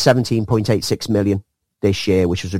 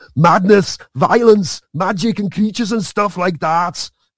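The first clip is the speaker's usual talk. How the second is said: put-on Austrian accent with raised pitch; 9 semitones higher than usual. On a podcast, repeating your own line about the story's madness, this time in the Arnie accent. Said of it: "I think I need to say that in the Arnie accent".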